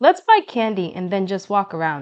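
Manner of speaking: ordinary delivery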